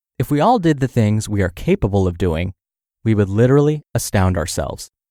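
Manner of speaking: ordinary talk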